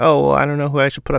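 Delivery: quick, mock passive-aggressive delivery. Quoting a woman's comment about who to put up, mock passive-aggressive. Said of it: "passive aggressive comment where she's like".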